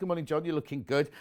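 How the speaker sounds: plain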